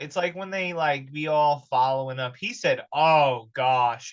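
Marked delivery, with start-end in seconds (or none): 2.9-4.1 mock irritated "oh gosh" sigh, louder. Retelling how the man reacted to the woman's request: imitating an annoyed "oh gosh". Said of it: "in a voice that's just like, "Oh, God damn it,"".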